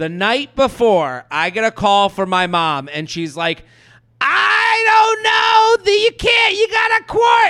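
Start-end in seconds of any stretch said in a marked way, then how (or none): 4.2-7.5 mock piercing scream, very high, shouting. Retelling the speaker's mom's call the night before a flight: retelling a scream. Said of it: "She's screaming".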